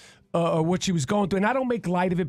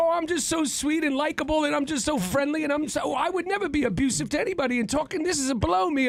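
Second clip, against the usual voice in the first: mocking put-on British accent, pitched higher; 9 semitones higher than usual. Mocking an actor's sweet, likable manner: mocking James Corden impression. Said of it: "As opposed to James Corden, who's like".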